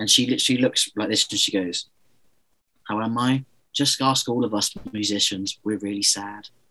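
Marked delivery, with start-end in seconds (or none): 2.9-6.5 flat, lifeless, miserable, dead-inside voice. Retelling the same interview one year later, imitating someone dead inside. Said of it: "someone who looks like they're already dead inside".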